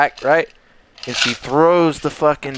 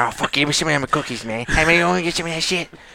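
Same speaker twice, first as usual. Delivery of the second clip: put-on dog voice; 3 semitones higher than usual. Showing how they give their dogs voices at home, in a put-on dog voice. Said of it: "these dog talks like this".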